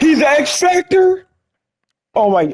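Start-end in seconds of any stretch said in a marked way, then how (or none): 0.0-1.3 shrill, all-out, very high, loud scream. Watching a game clip and hyping a drafted quarterback, screaming loudly. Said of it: "I'm so sorry for screaming that loud".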